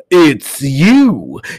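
shrill, very loud scream, long drawn-out you. A man waving his knife screams at a woman who just greeted him. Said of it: "he screamed while waving his knife".

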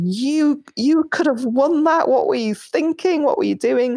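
put-on furious, exasperated, livid, high voice. Retelling what the males in their life said: imitating someone livid. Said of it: "absolutely livid and saying".

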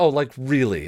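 sneering, disbelieving scoff. A man answers a woman's remark, scoffing. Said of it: "Don scoffed".

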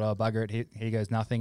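ordinary talk, nothing marked

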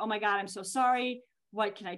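fake crying sounds. Retelling what Dad said, imitating him in tears. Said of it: "And my dad was in tears".

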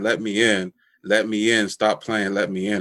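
normal talking voice

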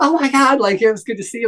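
put-on yelling. Retelling being honked at from a car at an intersection: imitating someone yelling. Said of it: "he yelled at them".

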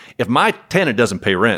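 put-on southern drawl, words drawn out. Retelling what a Texas property manager said, the speaker does a put-on southern drawl. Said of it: "he said in a southern drawl".

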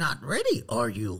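hushed, soft, tiny sage voice. Performing a line after being asked to do a Yoda voice: Yoda voice. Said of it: "I wanna hear your Yoda".

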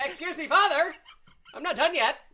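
put-on shrill, very high, loud old-timey newsboy shout. Riffing on confessionals, a confessor calls back to the father, in a 1920s newsie voice. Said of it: "Do you think that all confessions come from 1920s newsies?".

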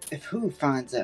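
hushed, quiet, secretive, kept-down voice. A player voicing their character replies to a warning, in a hushed tone. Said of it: "in kind of a hushed tone".

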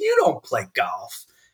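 straight-up New York manner of talking. Retelling what he said to a big man in the car, in his New York way. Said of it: "in my New York way".

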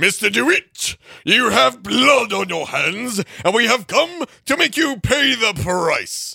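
high, showy, theatrical, dramatic flourish. Taking over a murder accusation after calling another's delivery boring: dramatic, with flair. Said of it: "you have to say that with more flair".

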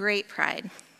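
heavily sarcastic tone. Telling listeners how long the marriage has been a partnership: heavy sarcasm. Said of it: "with heavy sarcasm".

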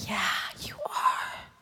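kind, gentle, soft, breathy whisper.

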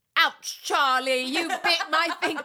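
full-on, loud, high-pitched yelling. Recalling screaming viral video quotes at people, yelling a viral video quote. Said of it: "but I'd yell".

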